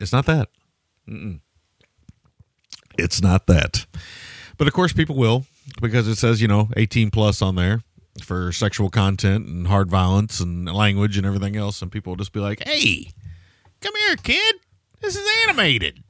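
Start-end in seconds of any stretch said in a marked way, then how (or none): 12.7-15.9 shrill, very high, swooping sing-song huckster patter. Joking about people showing an adult cartoon to kids: unnamed huckster impression. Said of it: "I don't know what impression that".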